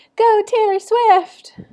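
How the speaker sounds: very high, loud, eager gushing excitement. Showing the fan eagerness to avoid when seeking to be taken seriously: eager, enthusiastic excitement. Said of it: "showing that like eagerness and enthusiasm".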